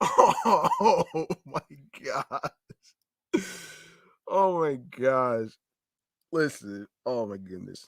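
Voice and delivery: slow words spoken through laughter. Reacting before reading out a quote, laughing while talking. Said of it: "I'm sorry for laughing".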